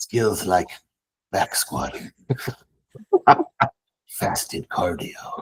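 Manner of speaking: hushed, breathy, near-whispered put-on famous-actor voice. Urged on by a listener, a speaker keeps up his Liam Neeson impression. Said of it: "Please keep Liam Neeson".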